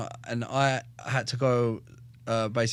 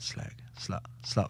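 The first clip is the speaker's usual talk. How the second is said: imitated mutter under breath, much quieter; 4 semitones lower, 11 dB quieter than usual. Retelling the speaker's brother taunting their sister: imitating a muttered insult. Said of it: "calling her a slag under his breath".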